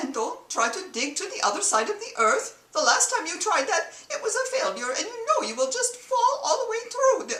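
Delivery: put-on very high, poorly done Middle Eastern accent. In an acted scene, a character speaks in a bad Middle Eastern accent. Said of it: "excuse the accent because I have no idea how to do a Mid-Eastern".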